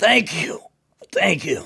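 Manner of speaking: strained, high, rough grunt, forced out. Narrator voicing the impaled Haramon as he is freed, Haramon grunting thanks. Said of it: "He grunts out a".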